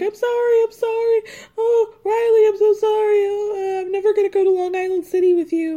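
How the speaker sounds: tearful sobbing, very high, weepy crying. Retelling a tearful apology on the show, mock crying as Tayshia. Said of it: "She starts crying".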